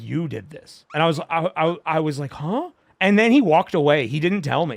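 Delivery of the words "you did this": play-acted grave, hushed, deathly serious tone. Recounting a man's accusation, imitating a deathly serious tone. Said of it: "He was like deathly serious".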